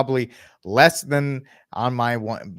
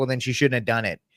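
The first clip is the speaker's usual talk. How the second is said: smug, self-satisfied, dismissive retort. Retelling a judge's answer to a husband's plea: imitating a smug reply. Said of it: "she smugly was like".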